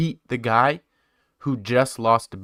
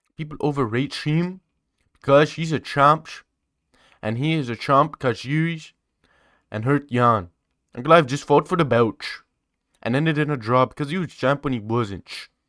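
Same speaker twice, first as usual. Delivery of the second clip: over-the-top, exaggerated put-on Brazilian accent; 3 semitones higher than usual. Talking about fighters and rankings: brazilian accent. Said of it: "That's my that's my Brazilian accent".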